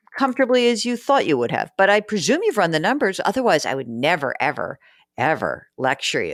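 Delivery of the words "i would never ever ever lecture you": thick, sarcastic tone, dripping with irony. After telling listeners they've surely run the numbers, a sarcastic disclaimer: sarcastic. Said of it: "Do you hear that sarcasm?".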